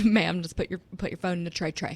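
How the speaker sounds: put-on Southern accent with drawl. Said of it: "I just gave her a Southern accent".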